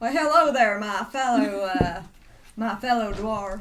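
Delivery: put-on Old West cowboy accent. Playing a dwarf in a D and D game, greeting a fellow dwarf, in an Old West accent. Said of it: "I'm thinking that should be Old West".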